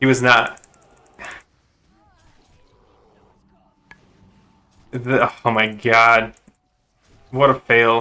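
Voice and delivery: slow, fed-up, irritated, exasperated tone. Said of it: "I'm irritated".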